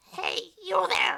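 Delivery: put-on wrinkly old woman voice. Voicing a character calling out at a studio gate, in an old wrinkly lady voice. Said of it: "how would an old, wrinkly lady sound?".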